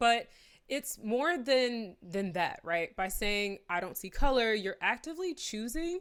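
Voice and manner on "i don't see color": ordinary talk, nothing marked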